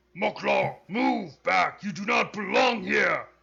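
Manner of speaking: very loud, rough, proud, pompous orc warrior voice. Game master voices a venerable orcish warrior; loud, pompous orcish warrior. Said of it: "very loud, pompous, and proud... venerable orcish warrior".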